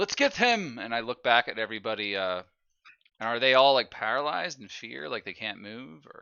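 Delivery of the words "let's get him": very high, rallying charging shout in put-on voice. Drawing a weapon as a creature flees, shouting in character. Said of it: "I'm just shouting".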